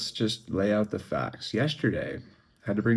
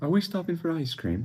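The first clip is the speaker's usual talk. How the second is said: put-on playful, fun little-kid voice, pitched up; 8 semitones higher than usual. Retelling what a friend asked in the car: fun little accent. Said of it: "He had a fun little accent".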